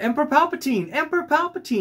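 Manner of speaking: put-on very high, thrilled, excited little-girl voice. Retelling a little girl calling out on an escalator: imitating an excited little girl. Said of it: "she was so excited to see the Emperor".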